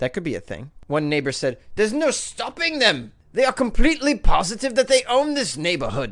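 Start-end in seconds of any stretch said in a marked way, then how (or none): 1.7-6.1 put-on old English accent, pitched up. Speaker quotes a neighbor, speaking in an old English person accent. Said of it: "I'm speaking like an old English person".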